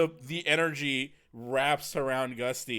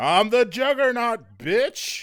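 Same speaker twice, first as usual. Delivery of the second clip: shrill, high, full-force screaming battle cry; 9 semitones higher, 8 dB louder than usual. Voicing a character charging a Ferris wheel leg: screaming in [name]'s voice.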